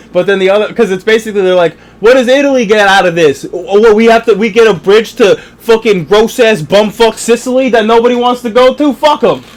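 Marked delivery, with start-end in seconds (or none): 2.0-9.3 put-on pitched-up Brooklyn Italian accent, verging on Sicilian. Acting out the other side's reaction in a retold exchange, in a Brooklyn Italian accent. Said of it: "I feel like you're kind of doing the Sicilian accent".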